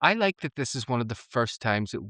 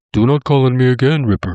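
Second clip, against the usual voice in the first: very loud, booming, monstrous demon voice; 2 semitones higher, 15 dB louder than usual. Recapping an episode, quoting a demon: imitating the demon's voice. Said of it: "I love that demon's voice".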